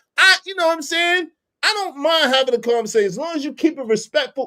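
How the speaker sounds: heated, very high insistence. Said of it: "Why you yelling?".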